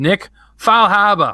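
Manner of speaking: very high, loud put-on New England accent. Reading out a supporter's name: New England accent. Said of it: "in my most New England accent possible".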